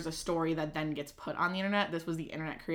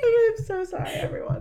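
laughing through words, higher and louder; 11 dB louder than usual. Apologizing after a laughing fit, still laughing hard while talking. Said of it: "I'm crying".

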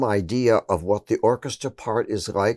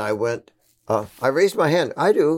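usual speaking voice

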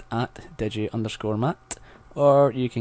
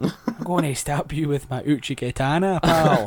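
slow, high Glaswegian accent; 5 semitones higher than usual. Playing a samurai who threatens a stab: Glaswegian samurai voice. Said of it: "The Glaswegian Ronin".

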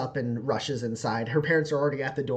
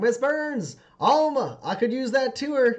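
shouting with much higher pitch; 11 semitones higher, 3 dB louder than usual. Game narrator voices a player's character calling out to Miss Burns, shouting. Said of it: "you shout like".

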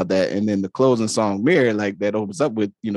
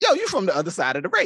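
light-hearted, jovial, joking tone, pitched up; 8 semitones higher than usual. Retelling a radio show joke about distant cousins: jovial Marlon Wayans imitation. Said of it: "he said it, like, in a jovial way".

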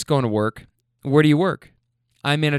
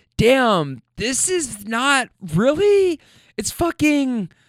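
put-on drunk girl voice, higher-pitched; 9 semitones higher than usual.

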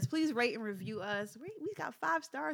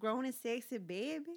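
playful put-on New Orleans accent; 2 semitones higher than usual. Repeating a sign-off line when asked to say it again, in a New Orleans accent. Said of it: "That was my New Orleans accent".

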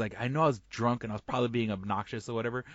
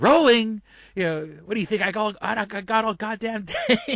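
shrill, very high, loud scream; 11 semitones higher, 8 dB louder than usual. Retelling how an actress yelled at the interviewer: imitating Harley Quinn voice shouting. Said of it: "she does in her Harley Quinn voice".

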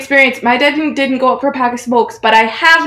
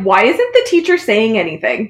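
usual speaking voice

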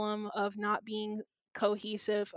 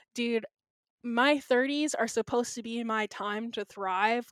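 usual speaking voice

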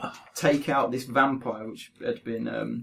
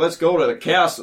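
put-on plain American accent, loud and slow; 5 semitones higher, 7 dB louder than usual. Mocking fantasy characters who speak with American accents: imitating an American accent. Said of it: "It's when they start saying things like".

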